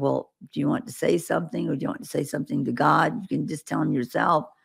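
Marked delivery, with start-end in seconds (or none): none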